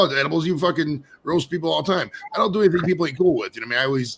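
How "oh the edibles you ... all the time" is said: ordinary talk, nothing marked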